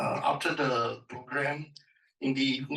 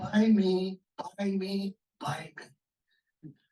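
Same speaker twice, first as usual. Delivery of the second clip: small, tiny voice, very slow and drawn out; 6 semitones higher than usual. Recalling a voice heard while passing a shop, in a small little voice. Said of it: "a small little voice".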